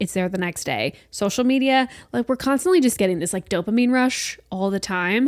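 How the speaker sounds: ordinary delivery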